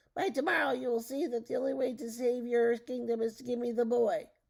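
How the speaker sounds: loud, cackling little-man voice. Reading a story aloud, the little man's parting threat: cackling voice. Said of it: "the little man crackled".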